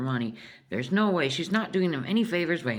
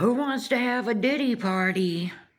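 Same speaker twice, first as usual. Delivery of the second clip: put-on yelling, pitched up high; 6 semitones higher than usual. Retelling Dakota calling out in a store: imitating someone yelling.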